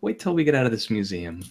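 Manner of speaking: lighthearted, playful, teasing tone. Translating Tony's line for the group in character: playful tone. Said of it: "Says in a playful tone".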